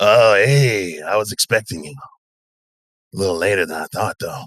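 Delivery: rough, rasping, raspy voice. A narrator voicing a character who greets the listener: raspy voice. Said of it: "as you hear his raspy voice".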